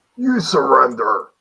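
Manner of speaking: menacing, high, very loud intimidating yell. Shouting back at hidden attackers to intimidate them: intimidating shout. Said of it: "Someone with intimidation shout back at them".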